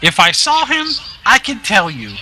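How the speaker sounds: bad goblin voice. Asked about a man, answering in the worst goblin voice ever. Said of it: "This is the worst goblin voice ever".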